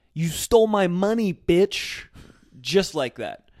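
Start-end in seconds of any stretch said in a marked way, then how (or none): 0.2-2.1 raging, shrill, loud, accusing scream. Telling a story about a lady who snatched a lighter, retelling a scream. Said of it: "She then screams to this random guy".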